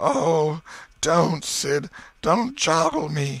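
high, drawn-out moan. Tom moans at sid, who is shaking him; moaning. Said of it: "Tom moaned out".

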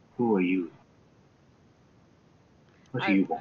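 feeble, weak, low half-whisper. Voicing a character who peers down at the player, in a weak half-whisper. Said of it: "very weakly seems to whisper to you".

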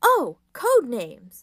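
very loud, fascinated cry. Reading a story, the leader answers a suggestion to use nicknames; fascinated. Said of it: "the leader says, fascinated".

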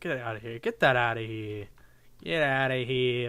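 speech gradually slipping into a New York accent. Speaker commenting aloud while playing a game, New York accent. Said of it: "My New York accent kicking in".

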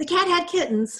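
sudden, very high blurted-out delivery. Pressed for help, James speaks up to Mr. Williams, blurting out. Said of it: "James blurted out".

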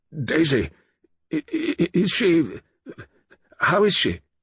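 speaking brokenly, voice breaking. Narrating a dazed colonel found in the smoking room, speaking brokenly. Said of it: "He said brokenly".

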